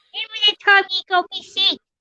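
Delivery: motherly voice, pitched very high. Talking about getting mum sick years ago, the speaker is imitating mum's voice. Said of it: "Do that voice".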